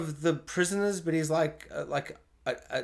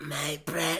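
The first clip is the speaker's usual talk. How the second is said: bad creature voice, much quieter; 4 dB quieter than usual. Speaker attempting Gollum impressions and failing at them: bad Gollum impression. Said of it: "not the night to do Gollum impersonations".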